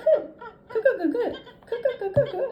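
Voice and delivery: high, loud cackling giraffe character sound.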